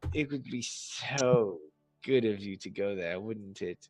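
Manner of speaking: hushed, alluring, coaxing murmur with drawn-out "so". Game master voicing a woman rubbing the player's chest, seductive. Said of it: "rubs her hand on your chest and she says".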